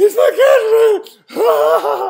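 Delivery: acted, very high, very loud, gasping through laughter. Retelling trying to explain to a cafe worker: imitating laughing while talking. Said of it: "I can't say that 'cause I can't breathe".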